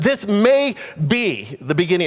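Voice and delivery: stress on the word "may". Quoting a statement about the beginning of the end: stress on may. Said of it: "I'm putting an emphasis on maybe".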